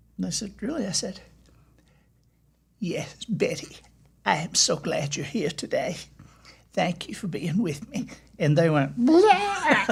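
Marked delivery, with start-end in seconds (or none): 3.3-8.1 spot-on, exact woman's voice. Proving they can sound exactly like her, imitating a woman's voice. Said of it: "I can do her voice and I can sound exactly like her".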